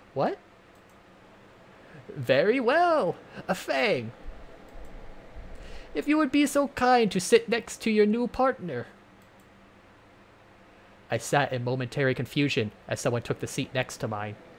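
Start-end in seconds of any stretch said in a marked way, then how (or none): 2.2-8.9 put-on high-pitched elderly teacher voice. Narrator voices the teacher pairing Fang with a new partner; old teacher voice. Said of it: "I'll probably just end up with that fossil of a teacher".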